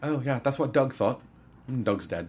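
put-on light, gentle New Zealand accent. Retelling the movie's plot, quoting Korg in his little Kiwi accent. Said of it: "he's got a little Kiwi accent".

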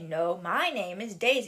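ordinary talk, nothing marked

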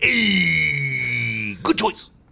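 low voice with "hey" long and stretched out. Joking that a sitcom character walks in and approves: Fonzie impression. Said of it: "And then Fonzie comes in. He's like".

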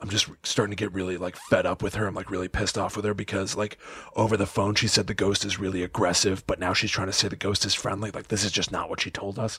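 hushed stage half-whisper. Retelling what someone said aside to the camera: imitating someone half-whispering. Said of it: "he's whispering into his lapel mic".

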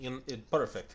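horrible, bad, put-on Russian accent. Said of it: "your horrible Russian accent".

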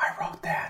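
very quiet, hushed whisper, close to the ear. Retelling what someone whispered into their ear: imitating someone whispering. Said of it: "leans into my ear and whispers".

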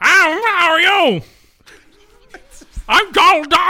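very high pitch, taken slowly. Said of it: "The actor who voiced Donald Duck".

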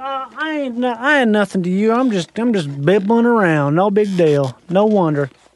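put-on, fake Southern drawl. Voicing a humble southern man: put-on low southern voice. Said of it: "that down sort of".

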